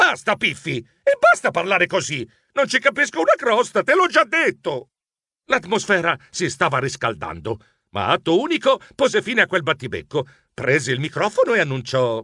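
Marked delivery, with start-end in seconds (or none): 0.0-4.9 exasperated, high, shrill shrieking outburst. The narrator shrieks back at his cousin during an argument, shrieking. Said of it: "Io strillai".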